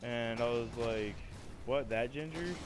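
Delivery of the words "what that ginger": plain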